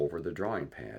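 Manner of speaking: ordinary delivery, nothing marked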